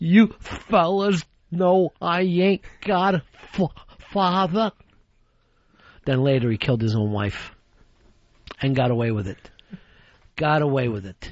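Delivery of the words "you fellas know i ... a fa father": put-on tearful crying, slow, stumbling over one word. Imitating Mickey at the Little Rascals father and son picnic: imitating Mickey crying. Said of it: "he just starts crying and goes like this".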